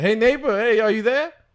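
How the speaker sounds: loud hollering shout. Playing a neighbor in an improv scene, calling over: shouting to a neighbor. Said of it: "You have to shout".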